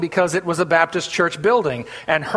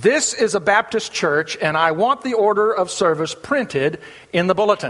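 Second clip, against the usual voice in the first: usual speaking voice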